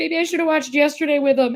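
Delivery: play-acted sobbing, grieving, tearful voice. Retelling a car ride to visit a dying father: retelling own crying. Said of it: "I started crying, going".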